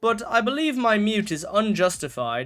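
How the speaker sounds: put-on British accent. Contesting a mute they call unjustified: put-on British accent. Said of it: "That's why I'm doing a British accent".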